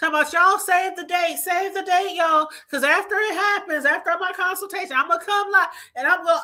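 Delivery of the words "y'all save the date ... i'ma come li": put-on overexcited, too happy, giddy gushing chatter. Mocking a woman who tells people to save the date: imitating someone too happy and giddy. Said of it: "you sound too happy and too giddy".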